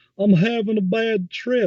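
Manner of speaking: very high, slow mocking mimicry, slight accent. Retelling how a friend mimicked the speaker: mocking imitation with a little accent. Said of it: "mimicking me and adding a little accent to it".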